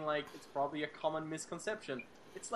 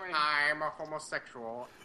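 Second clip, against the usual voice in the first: mocking old 1940s movie gangster voice, louder; 4 dB louder than usual. Mocking another speaker's way of talking: imitating a 1940s movie gangster. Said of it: "you sound like one of those nineteen forties gangsters in a movie".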